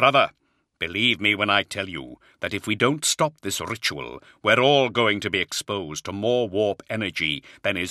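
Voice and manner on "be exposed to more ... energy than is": ordinary delivery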